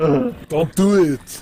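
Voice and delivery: heavy put-on Austrian action-hero accent. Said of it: "Yes, Arnold".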